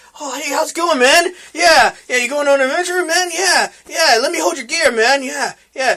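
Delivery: mock fake-friendly tone. Retelling how guild members acted once they learned of the Minotaur kill: imitating fake-friendly guild members. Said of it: "now they wanna be your buddy".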